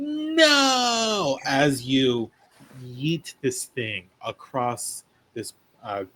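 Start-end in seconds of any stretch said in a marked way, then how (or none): 0.0-1.4 very high screamed no, stretched out long. Narrating a game scene, voicing Helen screaming. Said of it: "Helen is just screaming like".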